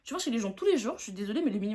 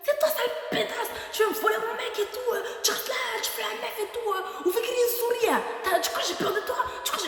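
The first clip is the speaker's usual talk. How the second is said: high-pitched mock screaming; 10 semitones higher than usual. Retelling how a woman screamed accusations at the speaker: imitating someone screaming. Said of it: "elle crie, elle dit".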